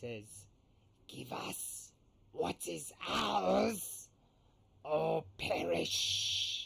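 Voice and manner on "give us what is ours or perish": very drawn-out, rasping, strained creature voice, very slow. Voicing a creature on the deck addressing the captain: creature straining to speak. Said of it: "as he strains to speak".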